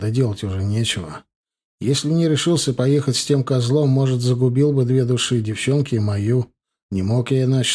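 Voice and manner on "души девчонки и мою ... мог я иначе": ordinary delivery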